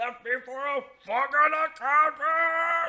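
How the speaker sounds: very high, very loud, furious, shrill raging scream. Recounting a game character's meltdown as he throws the table, retelling a furious scream. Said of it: "He starts screaming about the accountant again".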